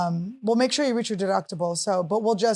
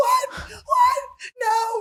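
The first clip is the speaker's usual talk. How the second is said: mock very high, blood-curdling screaming cry. Retelling a waxer's reaction to a call about a death: imitating someone screaming. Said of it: "she's screaming at the top of her lungs".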